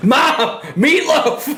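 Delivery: high-pitched yell mixed with laughter.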